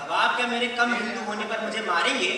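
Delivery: plain reading voice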